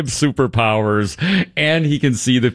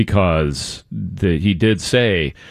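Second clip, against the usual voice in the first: ordinary talk, nothing marked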